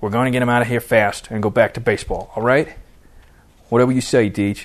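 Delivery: plain reading voice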